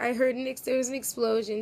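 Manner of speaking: usual speaking voice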